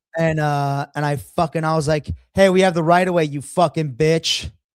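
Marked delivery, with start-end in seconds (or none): 2.4-4.5 put-on raised, elevated voice stopping just short of yelling. Retelling own words to a driver who sped around: retelling own raised voice. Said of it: "I didn't yell it, but I said it in, like, an elevated voice".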